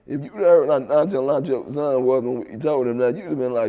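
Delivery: ordinary talk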